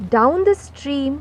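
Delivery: ordinary delivery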